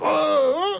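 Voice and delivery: high-pitched mock shout, repeated.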